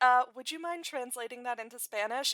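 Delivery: mock cheeky, sassy, snarky, pointed tone. Retelling a Bernardo line to the cops: sassy Bernardo line. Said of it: "And it's very sassy".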